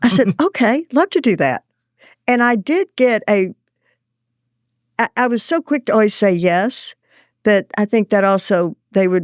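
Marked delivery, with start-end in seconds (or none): 0.4-1.6 heavy Texas drawl, laid on thick. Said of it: "big, thick Texas accent".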